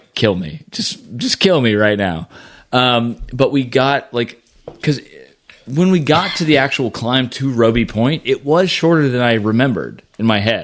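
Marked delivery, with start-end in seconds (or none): 0.2-2.3 whimpering voice. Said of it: "you couldn't hear me whimpering".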